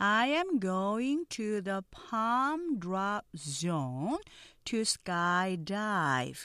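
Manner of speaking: very slow, careful reading, each word drawn out. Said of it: "느린 속도 발음 듣고 천천히 따라해".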